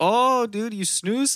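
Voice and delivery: put-on very high, terrible Swedish accent. Retelling a Swedish coworker's reaction on the hemp farm, in [name]'s bad Swedish accent. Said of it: "my Swedish accent's terrible".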